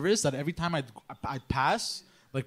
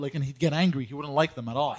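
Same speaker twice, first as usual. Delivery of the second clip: ordinary talk, nothing marked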